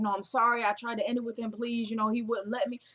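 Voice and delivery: put-on pleading, begging voice. Retelling a plot, acting out Anna pleading with the wife: retelling Anna begging. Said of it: "So Anna is now begging".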